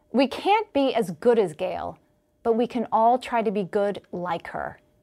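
ordinary talk

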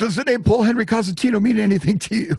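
very high blurted speech. Retelling their own phone call to a stranger, acting out blurting the question out. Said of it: "I blurted out".

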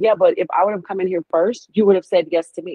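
ordinary talk, nothing marked

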